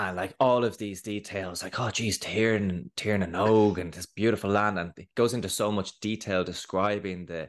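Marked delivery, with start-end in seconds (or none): 1.8-4.8 eager, enthusiastic, wonder-filled storyteller gush. Retelling how a storyteller began the tale: imitating an enthusiastic storyteller. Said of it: "telling the story with great enthusiasm".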